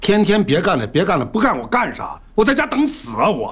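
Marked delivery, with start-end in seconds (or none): 2.3-3.3 loud yelling with raised pitch. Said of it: "你跟我喊啥呀".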